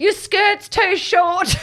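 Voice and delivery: very high, stretched-out holler. Retelling how Nanny called out from the car window: imitating someone yelling. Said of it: "And Nanny yells out".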